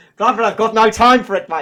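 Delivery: put-on terrible South African accent, spoken very loud. Quoting Devon's reply about why he stopped posting, Devon in bad South African accent. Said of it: "That's a terrible South African accent".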